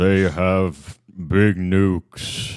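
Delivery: fake deep, authoritative voice. Showing a listener what Netanyahu sounds like, in a deep, commanding Netanyahu voice. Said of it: "he has a commanding voice".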